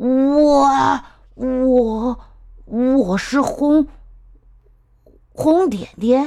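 stammering. A chameleon, asked by a lion what it is, answers stammering. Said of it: "变色龙结结巴巴地说".

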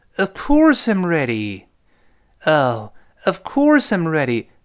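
slow, "of" skimmed, "course" hit hard. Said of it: "of 轻读一带而过，course重读".

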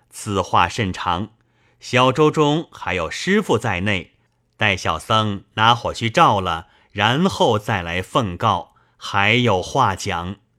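plain reading voice

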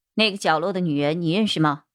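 plain reading voice

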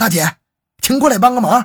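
loud, high-pitched shout.

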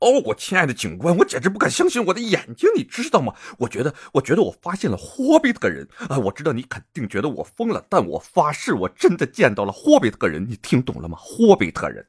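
high, anxious, fretting woman's voice. Retelling a phone call, speaking as the woman calling the police officer: imitating an anxious woman. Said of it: "传来一个焦急的女性的声音".

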